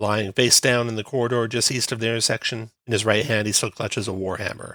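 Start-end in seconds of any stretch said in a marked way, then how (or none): none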